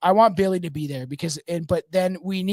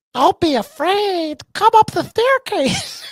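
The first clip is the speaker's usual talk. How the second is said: very high, loud, otherworldly alien voice; 14 semitones higher, 7 dB louder than usual. A storyteller trying out a voice for a story character, in an alien voice. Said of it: "How do I do an alien voice?".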